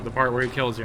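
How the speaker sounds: ordinary talk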